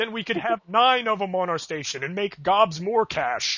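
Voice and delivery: broadcast announcer voice. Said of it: "I love your announcer voice".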